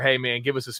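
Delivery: ordinary delivery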